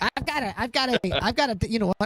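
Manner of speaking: high, squeaky chipmunk voice.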